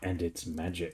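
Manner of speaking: very hushed, secretive, conspiratorial murmur. Voicing a character who leans in over a special family wine: conspiratorial tone. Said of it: "wiggles his eyebrows in that kind of conspiratorial".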